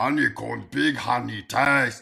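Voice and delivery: put-on slow, rough, drawn-out, odd French accent. Retelling a cereal commercial with a giant: Andre the Giant voice. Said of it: "the Andre the Giant accent".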